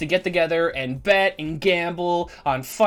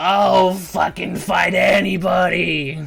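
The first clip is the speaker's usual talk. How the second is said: put-on loud, slow, sloppy, brawling drunken orc voice; 5 dB louder than usual. A drunk orc stumbles into the ring and speaks, drunk orc voice. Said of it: "this dude is clearly wasted".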